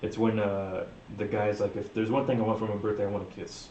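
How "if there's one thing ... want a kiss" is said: usual speaking voice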